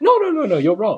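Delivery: put-on soft Indian accent. Imitating a man disagreeing with high-ranking officials, gentle Indian accent. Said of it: "he's got the Indian accent".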